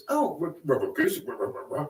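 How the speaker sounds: slow, swooping cartoon-dog stutter, drawn-out stuttered r's. Retelling how a man reacted to hearing a name: Scooby-Doo stutter. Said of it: "like Scooby-Doo".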